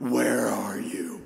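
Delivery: evil, menacing villain voice, low and creaky. Performing one of the voices the speaker hears in their head: evil, sinister voice. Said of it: "one of the most evil, sinister voices that I have in my head".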